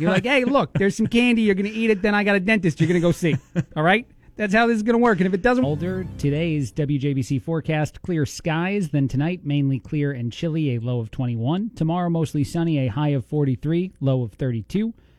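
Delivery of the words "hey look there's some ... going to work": voice and manner of an Italian-American family member. Imitating a relative from an Italian family scolding about candy: imitating Italian family member. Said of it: "now you're sounding like a part of my Italian family".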